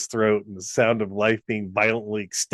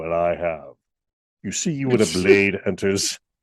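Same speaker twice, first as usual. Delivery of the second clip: put-on smooth baritone voice, pitched lower; 4 semitones lower than usual. Retelling Christopher Lee's reply in the story: smooth Christopher Lee voice. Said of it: "Lee replies very smoothly".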